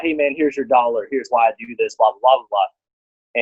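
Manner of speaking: normal talking voice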